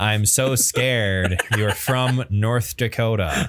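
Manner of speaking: plain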